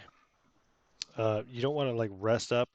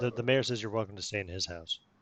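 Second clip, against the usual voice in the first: usual speaking voice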